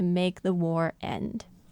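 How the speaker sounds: ordinary talk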